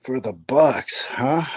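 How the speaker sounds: high, raspy, seductive voice. Answering a question about the Bucks pick: raspy, sexy voice. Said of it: "What a raspy, sexy voice you just used there".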